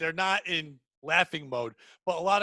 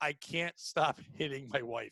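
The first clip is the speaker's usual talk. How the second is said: acted, tearful crying voice; 3 semitones lower, 6 dB quieter than usual. Retelling a man from the audience confessing onstage: imitating someone crying. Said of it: "he starts crying".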